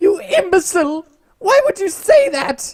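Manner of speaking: very high, shrill, very loud put-on shrieking voice. Voicing the character Skinnerfred, in a Winifred Sanderson voice. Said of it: "That's my best Winifred Sanderson voice".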